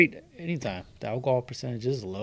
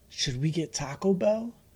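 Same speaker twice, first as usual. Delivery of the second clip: put-on high, hushed little toddler half-whisper; 5 semitones higher, 4 dB quieter than usual. Retelling a video where a toddler runs to his mom: imitating a toddler half-whispering. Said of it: "he whispers for some reason".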